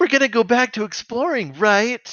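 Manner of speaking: mock whiny entitled child voice. Quoting a cartoon character's line: Cheetor sniveling entitled-child voice. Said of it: "the most, like, sniveling, like, entitled child kind of way".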